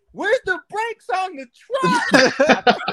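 very high-pitched, very loud shrieking scream. Retelling what Buddy screamed in the truck, retelling a scream. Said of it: "I hear Buddy start screaming".

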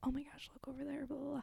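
silently mouthed words. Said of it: "sneaking with my lips".

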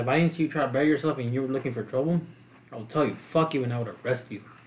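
normal talking voice

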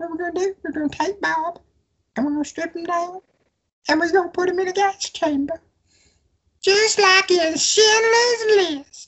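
very high, silly, annoying put-on voice. Telling a joke about Bob, the speaker switches to a put-on joke voice. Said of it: "this is not going to sound as bad because I'm talking like this".

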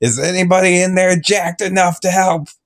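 put-on light shouted call-out, a mild yell. In an improvised scene, calling out inside the gym, yelling. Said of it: "I'm yelling".

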